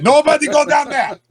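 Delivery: big troll voice, pitched very high. Voicing the big troll Hans warning about the hallway: big troll Hans voice. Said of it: "He's like".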